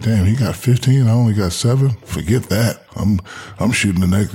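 ordinary talk

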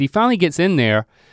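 plain

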